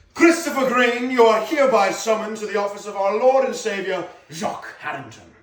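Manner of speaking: loud, high put-on British accent, slightly medieval. Acting a summons scene in a put-on British accent. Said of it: "your little British talk".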